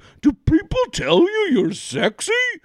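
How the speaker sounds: put-on frog puppet voice. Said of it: "His Kermit voice".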